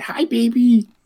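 very high, sweet voice. Showing how they talk when meeting a cat: high-pitched voice. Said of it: "I do the more high voice".

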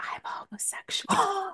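secretive, soft, barely voiced hushed whisper. Speaker retells someone leaning in to come out to him, retelling a leaned-in whisper. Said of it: "He leans and he's like".

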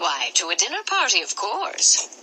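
plain

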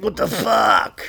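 angry, fed-up, pissed-off outburst. Retelling how a girlfriend reacted after the hospital: imitating someone pissed off. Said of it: "my girl was all pissed off".

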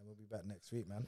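talking softly. Signing off at the end of a podcast episode, talking softly. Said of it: "Why are you talking so softly?".

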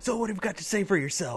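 mock drill-hall officer's yell, very high and barking. Retelling a commanding officer chewing out a Marine: imitating a commanding officer yelling. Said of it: "he yells at him".

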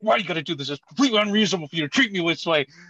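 furious, raging, unhinged, out-of-control ranting. Recounting a favorite movie phone-call scene, imitating Adam Sandler raging. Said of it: "he just starts losing it".

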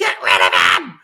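mock, loud, full-throated screaming. Retelling how she demanded Triple H be torn apart: imitating someone screaming. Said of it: "She is screaming at the top of her lu-, lungs".

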